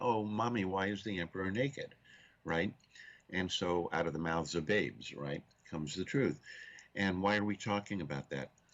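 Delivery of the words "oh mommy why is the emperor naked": put-on little girl's voice, blurted, calling out. Retelling the emperor tale, a little girl asks: imitating a child saying it loudly. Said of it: "says very loudly".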